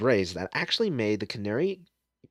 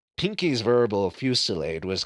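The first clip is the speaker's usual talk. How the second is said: ordinary delivery, nothing marked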